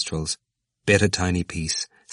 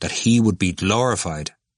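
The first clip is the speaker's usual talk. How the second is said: ordinary delivery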